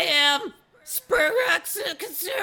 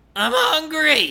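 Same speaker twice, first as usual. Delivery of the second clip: yelling little alien voice, much higher; 2 semitones higher, 5 dB louder than usual. A little alien at the foot of the bed yells: yelling little alien. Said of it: "throws an empty cereal box at me and yells".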